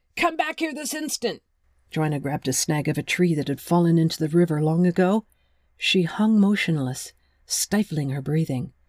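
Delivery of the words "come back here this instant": yelling, pitched very high. Narrator reads Moray yelling after Joanna as she escapes into the river. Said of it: "Moray yelled".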